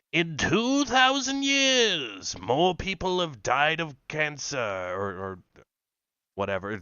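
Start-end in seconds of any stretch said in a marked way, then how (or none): 0.1-5.3 high, swooping put-on wizard voice. Mocking a man he calls a dipshit, in a mock wizard voice. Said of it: "That was a wizard voice".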